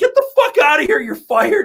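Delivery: shrill, swooping, very high, loud furious yell. Retelling how the manager yelled at the delivery guy: imitating a manager yelling. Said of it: "she's just yelling at him".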